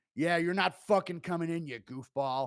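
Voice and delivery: dismissive, shutting out tone. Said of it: "Dana tells him it's a prank".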